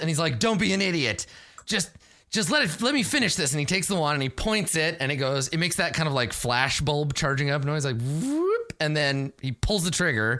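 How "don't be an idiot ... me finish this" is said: snarl, pitched up and impatient. Game narrator voices a character who gets punched and fires a wand, snarling. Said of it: "He snarls".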